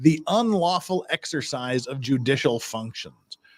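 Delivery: ordinary talk, nothing marked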